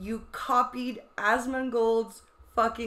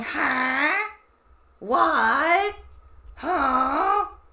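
loud squawk of confused noises, drawn-out "huh"; 4 semitones higher, 5 dB louder than usual. Imitating someone fumbling a puzzle lock: imitating a squawking voice. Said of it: "you sounded like a squawking".

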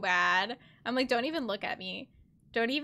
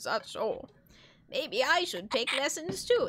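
put-on elderly woman's voice. Voicing over a watched scene, answering an old man: old lady voice. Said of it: "That's the old lady voice".

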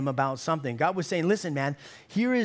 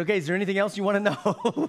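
snide, rude, sarcastic delivery; 3 semitones higher than usual. Retelling a rude remark at the end of a dinner: imitating own sarcastic remark. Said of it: "I sarcastically said".

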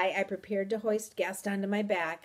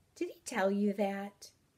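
plain

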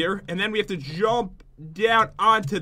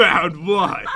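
mock-grumpy, louder; 4 dB louder than usual. Teasing the listener by imitating their reply about the seat, imitating a grumpy reply. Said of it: "You're like".

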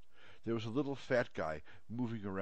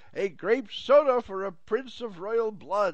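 booming, shrill, very loud, high, drawn-out shout; 13 semitones higher, 12 dB louder than usual. Narrator reads a store man shouting an order out onto the street, shouted. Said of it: "shouted onto the street".

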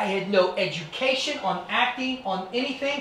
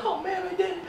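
tearful crying voice, higher; 10 semitones higher than usual. Retelling winning the title in the ring, imitating own crying. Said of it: "I'm in the ring and I'm crying".

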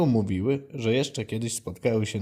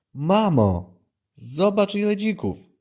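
high, slow, drawn-out, incredulous calling out; 9 semitones higher, 4 dB louder than usual. A young boar seeing so many boars, calling to his mother in disbelief. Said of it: "Zawołał z niedowierzaniem".

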